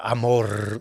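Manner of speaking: single word, drawn out and lingering slowly. Showing how Walter Mercado said love: imitating Walter Mercado saying love. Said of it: "He'd say love like that".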